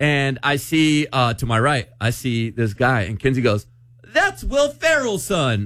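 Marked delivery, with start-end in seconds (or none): 4.0-5.7 acted loud, very high, shrill, swooping blurt. Leaving with others, retelling what a companion blurted on spotting a guy: retelling a loud exclamation. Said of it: "all loud".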